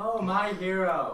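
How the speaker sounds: loud, sarcastic, clearly insincere praising tone. Telling friends how she reacted when he picked her up, retelling a sarcastic remark. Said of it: "like in the most sarcastic, non-serious".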